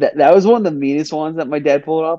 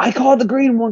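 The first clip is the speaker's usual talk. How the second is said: put-on shout, high and ringing; 9 semitones higher than usual. Retelling being super young and grabbing for a Play-Doh donut, retelling a yell. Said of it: "I even yelled".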